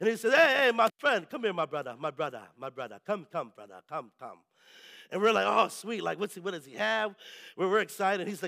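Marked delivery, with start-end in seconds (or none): 0.3-3.8 rusty put-on Jamaican accent, much lower. Retelling a man who called out to the group while they walked, rusty jamaican accent. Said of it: "I'm a little rusty on my Jamaican accent".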